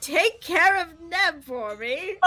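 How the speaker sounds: loud, yelled call projected across a distance. Voicing Robin calling to Feruza while heading down the hole: yelling out. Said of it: "is just going to yell out to Feruza".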